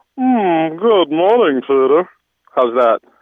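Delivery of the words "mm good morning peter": slow, lingering, pitched-up, flirty, seductive put-on voice. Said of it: "let me try to do that one again".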